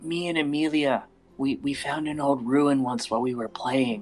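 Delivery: hushed whisper. Voicing a character speaking to a player's character, whispering. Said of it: "she kind of starts whispering".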